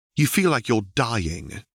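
blunt, no-nonsense and high-pitched. A woman answers a man who insists he is not injured: blunt retort. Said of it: "she retorts bluntly".

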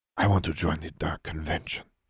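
hushed whisper. Reading a story aloud, a wizard confides a secret: whispering. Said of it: "bent forward and whispered".

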